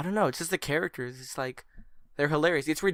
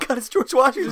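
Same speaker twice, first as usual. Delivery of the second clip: acted shrill shriek of terror, very high and loud; 10 semitones higher, 9 dB louder than usual. Telling a story about being knocked out, imitate a terrified man. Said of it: "He was terrified. He's like".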